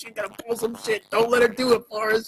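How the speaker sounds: mock high shouting. Retelling what someone shouts at a movie scene: imitating someone yelling. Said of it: "You're yelling".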